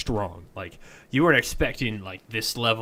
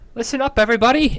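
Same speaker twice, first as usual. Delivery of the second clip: booming, high, ringing shout; 12 semitones higher, 7 dB louder than usual. Narrator voicing a character who cups her hands to address everybody, booming shout. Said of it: "her voice echoes and booms".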